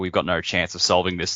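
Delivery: ordinary talk, nothing marked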